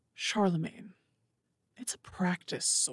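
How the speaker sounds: sneering, hushed whisper. Voicing a sneering creature that grabs a katana: sneering familiar voice. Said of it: "there's a sneer on its face".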